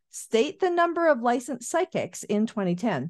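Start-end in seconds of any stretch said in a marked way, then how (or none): none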